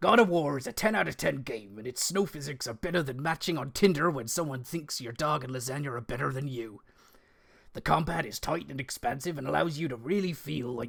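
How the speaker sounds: West Country accent throughout. Reading Bill's predictions, the speaker switches from American to a West Country accent. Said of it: "I'm doing it West Country".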